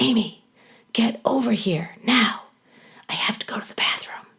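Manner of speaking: very loud, carrying stage whisper. Retelling how a teacher called out in the hall: imitating a loud whisper. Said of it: "in a very loud whisper".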